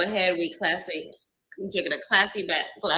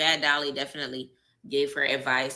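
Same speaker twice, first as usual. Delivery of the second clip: ordinary delivery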